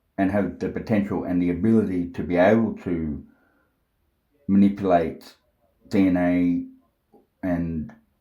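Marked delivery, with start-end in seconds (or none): 5.9-7.9 very slow, halting, thinking aloud. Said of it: "sorry that I'm speaking slow".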